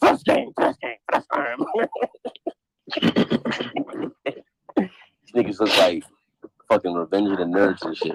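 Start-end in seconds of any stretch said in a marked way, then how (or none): 0.0-1.6 high, put-on mocking voice. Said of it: "Yo, he's like".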